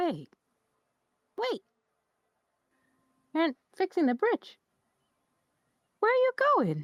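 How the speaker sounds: very high, swooping fox character voice. Telling the story, the speaker voices the Arctic fox calling to the travelers: high-pitched Arctic fox voice.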